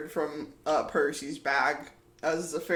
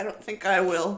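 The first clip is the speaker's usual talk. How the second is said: fairy voice, defiant; 3 semitones higher than usual. Voicing a fairy who refuses an order: defiant fairy voice. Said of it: "He looks at you, Percy, and he goes".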